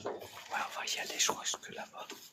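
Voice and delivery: soft, unvoiced whisper.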